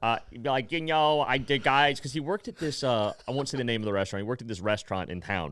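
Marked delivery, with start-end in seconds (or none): 0.7-2.0 slow, deliberate, drawn-out and unhurried delivery. Retelling what Trevor would say: impression of Trevor. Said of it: "my impression of him".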